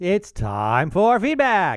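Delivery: big, showy, swooping game show host announcer voice. Show host introducing the feedback segment, in a game show host voice. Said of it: "I sound like a game show host".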